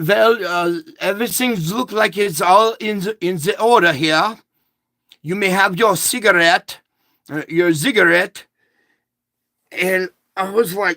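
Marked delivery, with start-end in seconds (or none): 0.0-8.4 put-on spoken in English with a German accent. Retelling what a woman said after reading his papers; German accent. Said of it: "with a German accent".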